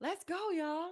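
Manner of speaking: put-on cheering yell, pitched very high. Retelling cheering for a daughter's team at games: imitating own cheering yell. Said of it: "I'm screaming, I'm yelling".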